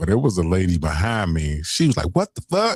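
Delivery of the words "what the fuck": put-on mad, angry outcry, very high-pitched. Retelling what a woman in line behind said: imitating an angry woman. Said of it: "she was mad as hell".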